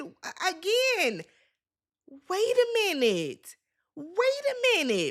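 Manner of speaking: high, slow, drawn-out exasperated delivery.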